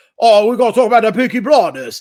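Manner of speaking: loud, high yelled Cockney accent. Recounting talk of a show at dinner, speaker demos its yelled Peaky Blinders Cockney accent. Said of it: "that Cockney accent where it's like".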